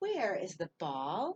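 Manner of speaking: rising pitch at the end on ball. Reading a sentence aloud to find its end mark, rising pitch on ball. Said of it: "Did you hear my voice go up at the end?".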